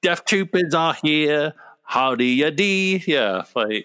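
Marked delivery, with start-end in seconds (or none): 0.0-3.0 higher-pitched, badly put-on Cockney accent.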